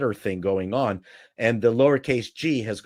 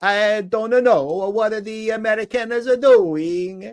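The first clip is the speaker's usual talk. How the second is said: bad fake Italian accent, very high; 11 semitones higher, 4 dB louder than usual. Quoting an Italian man, the speaker does a bad Italian accent. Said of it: "so I have to do my bad Italian accent".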